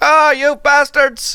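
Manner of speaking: attempted Icelandic accent, pitched very high. Acting out one guy in Iceland, the speaker attempts an Icelandic accent. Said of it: "I don't know what an Icelandic accent is".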